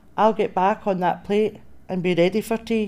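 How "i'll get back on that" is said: ordinary delivery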